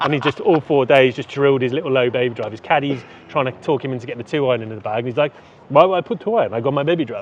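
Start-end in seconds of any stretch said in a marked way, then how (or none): 5.7-7.2 imitated French accent. Retelling a golfer refusing his caddy's two iron suggestion, put-on french accent. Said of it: "in his French accent".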